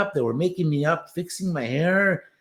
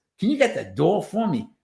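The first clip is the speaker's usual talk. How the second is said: put-on New York Brooklyn accent. Retelling doing a line the director asked for on set: Brooklyn accent. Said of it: "can you give me a nice Brooklyn accent?".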